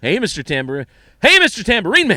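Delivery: overacted, hammy, very loud and high-pitched. Showing how the performer says the line differently each time: William Shatner impression. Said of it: "like he's doing acting exercises every time".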